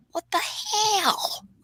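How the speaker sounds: breathy, whispered puppet voice. Speaker tries his impression of Jeff Dunham's puppet: Peanut puppet voice. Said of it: "I can do an impression of Peanut".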